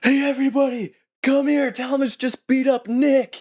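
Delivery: very high, loud calling out. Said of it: "he's like".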